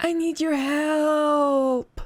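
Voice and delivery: weak, high, very slow voice, "help" drawn out. Narrating a phone call, the caller on the line speaks in a weak voice. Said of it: "a weak voice says".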